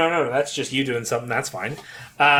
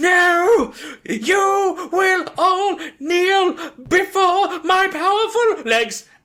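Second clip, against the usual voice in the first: furious creature shriek, very high, very slow, drawn-out; 4 dB louder than usual. Voicing an incensed creature seeing the tower: shouting enraged creature. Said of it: "you just hear this".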